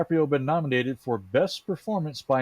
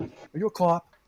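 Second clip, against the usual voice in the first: bad put-on Boston accent, pitched higher; 2 semitones higher than usual. Goofing around in a group conversation, dumb boston accent. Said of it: "We're just doing a dumb Boston accent".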